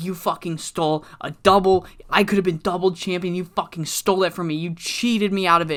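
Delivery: put-on furious wrestler voice, ranting. Retelling a wrestler confronting his rival: imitating a pissed-off wrestler. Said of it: "They're both fucking pissed at each other".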